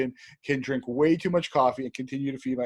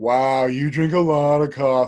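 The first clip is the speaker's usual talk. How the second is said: mock-condescending, patronizing tone, slower pace; 6 dB louder than usual. Retelling what people always tell the speaker, mimicking a condescending remark. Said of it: "in a slightly condescending voice".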